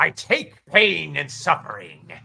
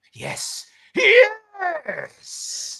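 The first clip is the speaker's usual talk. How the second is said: very high, swooping, triumphant hissing voice. The parasitic mask, reaching for a new host, hisses in triumph. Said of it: "The mask hisses in triumph".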